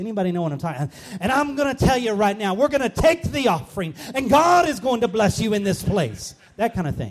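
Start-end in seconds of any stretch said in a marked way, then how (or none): 1.2-6.3 loud, raised preacher voice. Speaker retells a man up front taking the offering: imitating a preacher voice. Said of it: "he had this kind of preacher voice".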